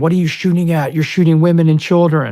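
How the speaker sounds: terrified, high, loud frightened scream. Retelling what a scared Army soldier said during shooting: imitating someone screaming. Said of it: "she was screaming".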